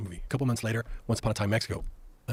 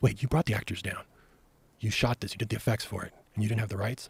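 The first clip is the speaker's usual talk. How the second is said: put-on, very dramatic voice. Retelling an agent's reaction to an unrequested short film: imitating an agent being very dramatic. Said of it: "the guy gets very dramatic".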